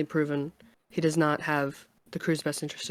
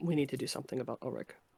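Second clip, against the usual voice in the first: very quiet, conspiratorial, secretive hushed murmur; 3 semitones lower, 10 dB quieter than usual. A character moves closer to a companion and speaks privately, in a quiet secretive tone. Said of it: "in a quiet tone".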